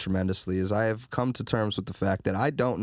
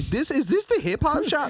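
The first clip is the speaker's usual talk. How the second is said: terrible fake European accent, very high; 3 dB louder than usual. Retelling a visitor from Europe coming into the shop, in a terrible fake European accent. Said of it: "That's a terrible European accent".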